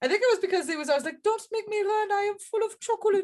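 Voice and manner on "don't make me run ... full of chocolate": high-pitched German cartoon character accent. Retelling a friend's Uter line from The Simpsons: Uter impression. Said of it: "it was his impression, right?".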